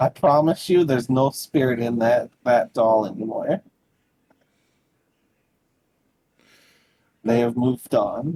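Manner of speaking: voice heavy with hurt and pain. A game master voices a woman speaking to the players, in a pain-filled voice. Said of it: "in like a, a pain-filled voice".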